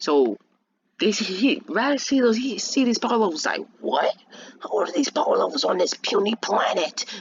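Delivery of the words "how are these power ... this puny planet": done-up put-on alien invader villain voice. Retelling a scene, the speaker acts out what he says in a put-on voice. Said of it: "that was a good voice".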